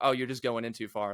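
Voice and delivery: ordinary talk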